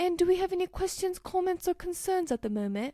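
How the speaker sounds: put-on British accent, put on. Retelling what a chemistry professor used to say, imitating his british accent. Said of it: "That sounds very, like, British accent".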